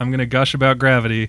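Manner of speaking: normal talking voice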